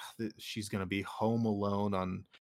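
ordinary delivery

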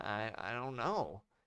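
desperate, stammering voice. Holding a woman as blue light approaches, he answers with desperate stammering. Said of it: "he stammered desperately".

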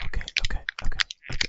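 breathy asmr whisper. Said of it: "we're done with Asmer".

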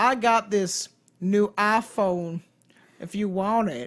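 slow, acted Southern accent. Voicing a woman's lines in a scene, put-on southern accent. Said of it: "I don't know why she's Southern".

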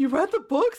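mock very high, bewildered, baffled disbelief. Retelling how another person reacted on learning the speaker read the books, mock-confused. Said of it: "he looked at me all confused".

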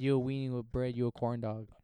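ordinary delivery

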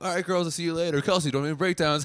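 high, oblivious-sounding voice. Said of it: "he wouldn't be like".

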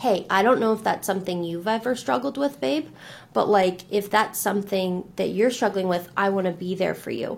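usual speaking voice

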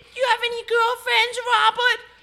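very high put-on old-lady voice. Acting out a grandma asking a boy about girlfriends: put-on grandma voice. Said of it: "Grandma, I'm seven".

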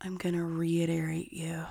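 slow and close to the mic. Answering a request to say it slower and closer: slower, close to the mic. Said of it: "Say it slower and closer to the mic".

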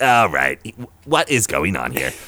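comic sitcom-style voice, pitch swinging all over. Showing the character he plays in D and D: Rafi voice from The League. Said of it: "just like a little Jason Mantzoukas".

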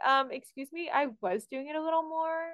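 cheeky, sassy talking-back tone. Retelling an actress answering the director in an audition: imitating a sassy retort.

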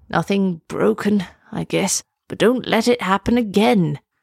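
muttering. Reading a story, the turtle answers the girl who sat on it, muttering. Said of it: "then muttered".

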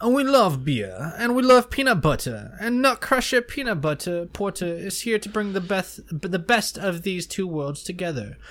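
put-on, extremely snooty, haughty stuck-up voice. Reading a peanut butter porter description aloud in the snootiest possible voice. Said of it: "I'm going to do this in my snootiest voice possible".

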